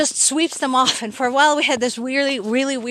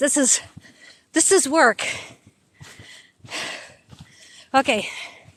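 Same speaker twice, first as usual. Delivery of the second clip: out of breath, huffing and puffing. Speaker filming for viewers while hiking uphill through snow, huffing and puffing. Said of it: "Sorry for huffing and puffing".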